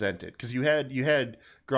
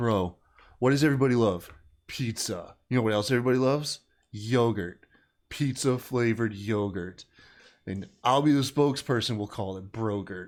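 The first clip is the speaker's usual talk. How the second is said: put-on stoner voice. Retelling a guy pitching a product like on Shark Tank, in a stoner voice. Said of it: "He's he's talking all like a stoner".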